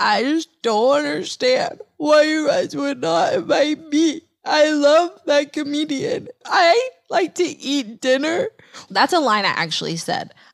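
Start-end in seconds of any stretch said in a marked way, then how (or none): 0.0-8.5 put-on high, tearful, distraught sobbing, half unintelligible. Retelling what was said to coworkers while distraught: imitating own past sobbing. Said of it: "I started sobbing like someone very close to me had died".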